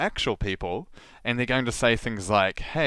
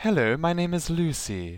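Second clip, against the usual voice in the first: high, poor, put-on posh British accent; 6 semitones higher than usual. Speaker recalls her made-up accent characters: crappy upper-class British accent as Lucy. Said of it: "I'm very upper class and some kind of crappy, ephemeral British accent".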